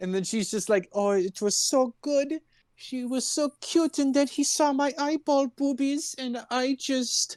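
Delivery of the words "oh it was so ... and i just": put-on, high, slow French accent sliding into German. Retelling a friend's story in an accent a listener hears going german: accent drifting german. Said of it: "you're getting a little German".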